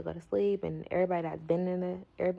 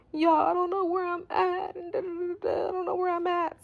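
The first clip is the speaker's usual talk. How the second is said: put-on very high, sobbing, crying voice; 12 semitones higher, 4 dB louder than usual. Retelling a phone call from a lost girl: imitating someone crying. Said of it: "crying on the phone".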